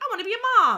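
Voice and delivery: put-on high, loud, excited childlike voice.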